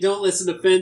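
ordinary talk, nothing marked

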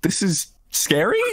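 hesitant, unsure, rising questioning tone. Retelling how another speaker called something scary: imitating an unsure question. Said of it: "so you just said it like".

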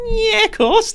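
put-on very high, loud Liverpool accent, pitched way up. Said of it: "I read it in the accent".

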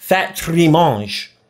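attempted French accent. Joking that Corel trimmed the fat, in a mock French accent. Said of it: "I'm trying to be French".

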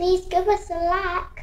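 sad, pitiful English orphan voice. Ending the video, asked by the other speaker to say it again: sad English orphan voice. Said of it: "Say it with your sad English orphan voice".

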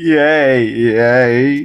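put-on crying cheer on "yay". Mocking someone who cried earlier, cheering with a mock crying yay. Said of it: "I don't need any of that yay crying crap".

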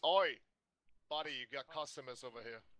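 irritated, angry shout, barked out. Playing a character calling to a blacksmith: angry shout. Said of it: "angrily shouts to the man".

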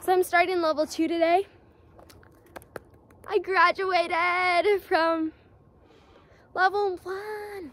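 puffing, winded, out-of-breath talk. Speaker talking in a video about their progress, out of breath. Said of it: "I'm out of breath".

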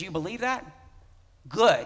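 loud, mock sarcastic, falsely approving tone. Quoting a verse written to believers: retelling a sarcastic remark. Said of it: "he's saying that sarcastically".

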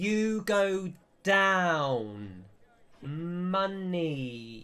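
condescending English voice. Voicing a lift attendant addressing strangers: English person talking to foreigners. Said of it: "talking to them in the way that English people talk to foreigners".

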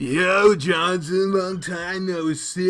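very slow, drawn-out surfer dude drawl. Demonstrating a voice someone suggested for a character: surfer dude voice. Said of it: "I thought you should have a surfer dude voice".

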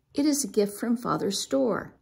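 ordinary delivery

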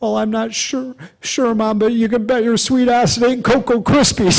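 put-on high, trembling, scared little-boy voice.

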